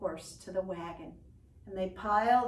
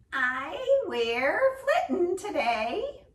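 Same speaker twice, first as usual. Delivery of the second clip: tiny squeaking creature voice, high, slow and loud; 9 semitones higher, 8 dB louder than usual. Reading a story, the hidden Boggart answers a neighbor: Boggart's little squeaky voice. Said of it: "came a little squeaky voice".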